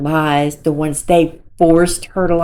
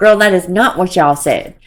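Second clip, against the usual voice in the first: ordinary talk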